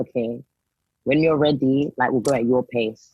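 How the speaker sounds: usual speaking voice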